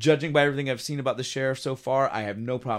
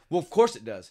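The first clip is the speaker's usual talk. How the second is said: fed-up, seething, pissed-off tone. Retelling a scene where the wife answers the sheriff: imitating someone pissed off. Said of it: "pissed off as all get out".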